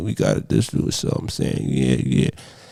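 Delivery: sleepy, breathy mumble whispered through a barely open mouth. Describing how people talk nowadays, imitating sleepy mumbled talk. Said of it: "everybody kind of talks like they're asleep".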